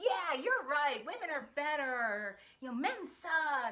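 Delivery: loud, thoroughly angry voice. Speaker acts out their radical feminist side, in a mock-angry radical feminist voice. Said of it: "in my radical feminist voice ... I'm all angry".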